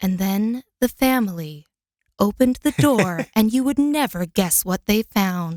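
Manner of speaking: suspenseful, mysterious ghost-story narration tone. Demonstrating the ghost-story voiceover they wanted, in a mysterious tone. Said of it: "they wanted it obviously more mysterious".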